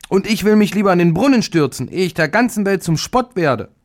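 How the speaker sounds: high indignant crying out. Reading a fairy tale, the middle sister speaks after the eldest: indignant outcry. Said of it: "rief entrüstet".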